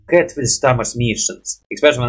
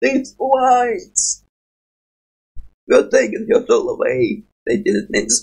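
very high, swooping character voice; 11 semitones higher than usual. Speaker tries voice acting Fiddlesticks' lines and admits doing badly, Fiddlesticks voice. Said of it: "freaking sucking at the voice of fiddlestick right now".

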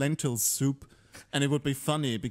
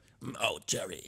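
voice like a heavy chain smoker; 5 semitones lower, 6 dB quieter than usual. Imitating how a sitcom character says a friend's name: George impression like heavy smoker. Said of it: "George is a heavy smoker all of a sudden".

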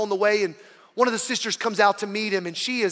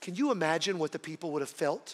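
normal talking voice

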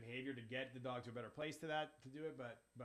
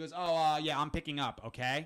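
put-on curt rude tone, much louder; 3 semitones higher, 13 dB louder than usual. Retelling how a man answered about a pickup, imitating a rude reply. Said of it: "I don't understand why you're being rude with me".

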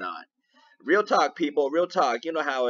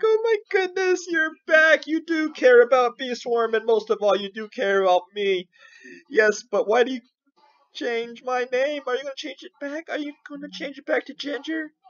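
loud, gushing, excited little bear voice; 11 semitones higher, 4 dB louder than usual. Voicing the little bear welcoming the speaker back: voicing an excited pet bear. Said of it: "my little bear is all excited".

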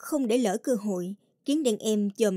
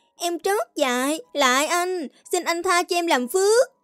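high, feigned fearful whimpering; 8 semitones higher, 4 dB louder than usual. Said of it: "làm ra vẻ sợ sệt, gục đầu xuống đất rên rỉ".

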